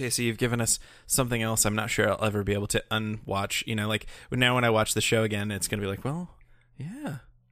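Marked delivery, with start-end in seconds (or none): 6.0-7.2 high, soft, soothing, calm murmur. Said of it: "like a massage for my eardrums".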